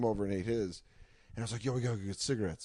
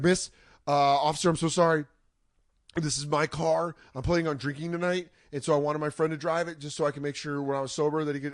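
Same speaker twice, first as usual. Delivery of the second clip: put-on stoned, spaced-out, high rambling talk; 5 semitones higher, 4 dB louder than usual. Retelling how they talked to a police officer at the car door: imitating talking high on mushrooms. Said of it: "mushroom talking".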